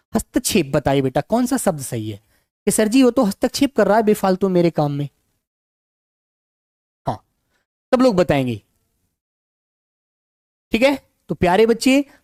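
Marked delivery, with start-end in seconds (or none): none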